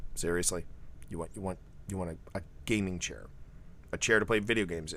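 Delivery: totally deadpan, very low and hushed. Recalling his dad's reply to his birthday wish, imitating dad's deadpan. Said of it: "He just just totally deadpan".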